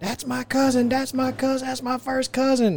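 very high, shrill, repeated yelling. Retelling an arrest at a domestic call: imitating someone yelling. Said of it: "She started yelling".

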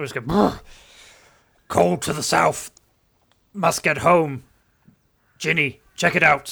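booming, very loud, strange horse-like voice. Playing a big stallion persona, in a strange stallion horse voice. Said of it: "as this strange stallion horse voice".

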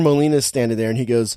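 ordinary talk

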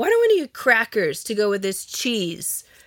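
acted snotty, uppity, swooping sing-song tone. Retelling what JR asked over a late-night snack: snotty JR imitation. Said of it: "Why do you make me sound snotty?".

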